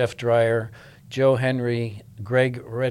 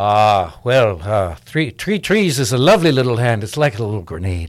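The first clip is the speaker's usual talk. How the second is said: put-on Irish accent, louder; 7 dB louder than usual. Asked in an interview to give a little Nicky, the actor performs Nicky's Irish accent. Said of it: "Can you give us a little Nicky?".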